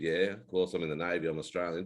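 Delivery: ordinary talk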